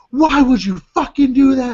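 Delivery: high, livid, furious outburst. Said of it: "and she's livid".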